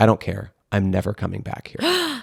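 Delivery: put-on very dark, strange, swooping delivery. Retelling the driver's reply about never coming back, in a mock dark, weird tone. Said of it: "In like a really dark, weird".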